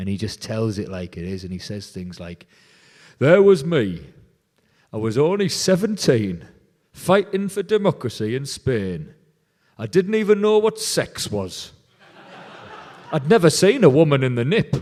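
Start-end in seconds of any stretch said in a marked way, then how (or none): 3.2-14.7 put-on loud, booming, swooping broad Teesside accent. Quoting a storyteller's recorded memories of fighting in Spain: Johnny Longstaff's broad Teesside accent. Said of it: "he delivers it all in this broad Teesside accent".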